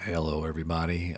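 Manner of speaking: deliberately deepened put-on voice, low and soft. Trying out a voice for the show, speaker greets everybody in a deliberately deep voice. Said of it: "maybe I should talk like this. ... I'm going to have a nice deep voice".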